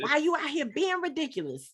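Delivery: high, sassy, scolding mama voice.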